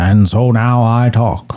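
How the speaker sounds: put-on deep narrator voice. Trying a Morgan Freeman voice in a contest: Morgan Freeman voice. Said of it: "Morgan Freeman".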